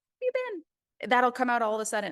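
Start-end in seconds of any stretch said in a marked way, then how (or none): 0.2-1.1 put-on high-pitched happy girly voice. Greeting someone unseen for long on a live stream, in happy, girly voice. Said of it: "my happy, girly voice will come on. I'll say".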